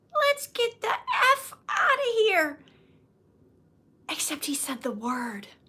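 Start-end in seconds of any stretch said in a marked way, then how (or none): 0.2-2.6 put-on very high, tiny, cute little-kid voice. Retelling what a three-year-old said on vacation: imitating a tiny toddler voice. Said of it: "his tiny little cute little toddler three-year-old voice says".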